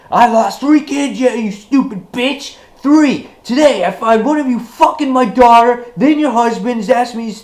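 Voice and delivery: very high, furious, raging shout. Retelling how a man blew up at a woman, retelling a furious outburst. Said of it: "Herschel just blows up all over the place".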